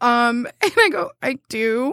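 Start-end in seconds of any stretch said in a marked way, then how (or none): 1.2-1.9 put-on very tentative, hesitant voice. Retelling own answer in a dating-site chat: imitating own very tentative reply. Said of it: "super tentatively".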